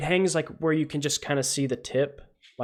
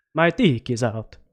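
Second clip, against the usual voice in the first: put-on Transylvanian accent, much lower; 3 semitones lower than usual. Redoing a joke line as Dracula, in a Dracula Transylvanian accent. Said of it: "You gotta do it in a Transylvanian accent though".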